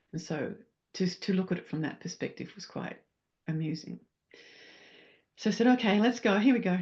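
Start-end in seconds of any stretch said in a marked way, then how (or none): 5.6-6.8 loud, playful, play-acted rallying call. Acting out a plan made before the fall, playfully acting out own past words. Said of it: "Probably didn't say it like that".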